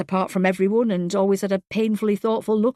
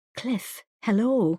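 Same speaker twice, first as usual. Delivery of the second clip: hushed, quiet voice; 3 dB quieter than usual. Answering a phone call in a corridor, not wanting to be overheard, quiet voice. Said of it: "she said in a quiet voice".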